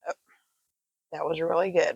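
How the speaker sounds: chewing while speaking, mouth full. After taking too big a bite, talking with mouth full, chewing. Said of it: "Trying to chew and talk at the same time".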